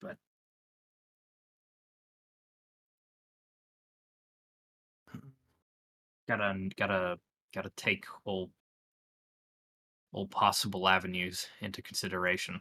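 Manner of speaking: close half-whisper, as if meant for one ear. In a tabletop game, a character leans over to someone, half-whispering. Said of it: "he's just gonna lean over and just whisper".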